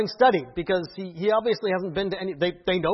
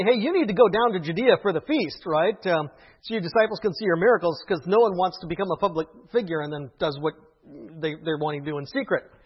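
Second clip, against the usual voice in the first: usual speaking voice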